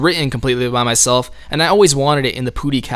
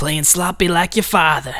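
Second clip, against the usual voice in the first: put-on higher, goofy, crazy Southern accent. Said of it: "doing all those crazy Southern accents".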